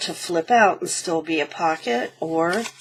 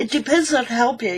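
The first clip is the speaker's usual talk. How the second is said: yawning while talking, much higher pitch; 5 semitones higher than usual. Explaining how big to make a paper pocket, yawning while talking. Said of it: "excuse me for yawning".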